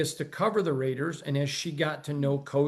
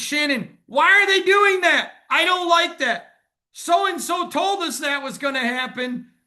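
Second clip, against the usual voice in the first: put-on complaining voice, higher and louder; 13 semitones higher, 8 dB louder than usual. Retelling texts from Shannon during games: imitating Shannon complaining. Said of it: "And it's".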